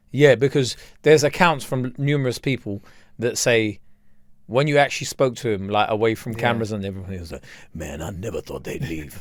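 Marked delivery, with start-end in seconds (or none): 7.7-9.2 very low, gruff voice. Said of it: "that kinda deep voice".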